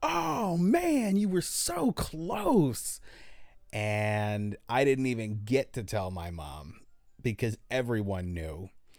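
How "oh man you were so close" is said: very high, drawn-out, top-of-the-lungs yell. Retelling what a man at the counter yelled at them, retelling a shout at full volume. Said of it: "he just goes at the top of his lungs to me".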